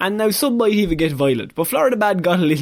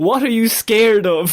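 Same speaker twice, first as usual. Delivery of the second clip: mock dramatic shout, high pitch; 5 semitones higher, 3 dB louder than usual. Retelling what a man in a video shouted to an officer: imitating a shout. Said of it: "he shouts".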